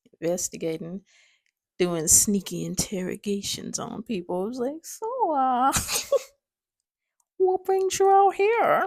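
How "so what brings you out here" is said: terrible put-on Minnesota accent, pitched up. Speaker retells questioning people on the sly, in a terrible Minnesota accent. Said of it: "That's my terrible Minnesota accent".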